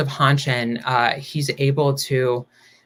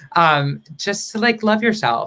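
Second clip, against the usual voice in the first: emotional, choked-up, pitched-up voice catching; 6 semitones higher than usual. Speaker sharing a personal message, getting choked up. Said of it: "I'm getting choked up".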